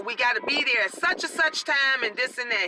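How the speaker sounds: plain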